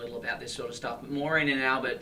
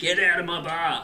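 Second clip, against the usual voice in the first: mock loud, drawn-out, bellowed shout; 5 semitones higher, 5 dB louder than usual. Imitating a guy behind a bar: shouted impression of a barman. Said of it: "shouting, ... That's that's my impression of this guy".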